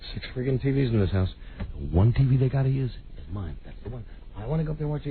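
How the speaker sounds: mock under-breath grumbling. Speaker retells his own past grumbling at a Thanksgiving gathering, muttering under his breath. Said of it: "I'm talking under my breath".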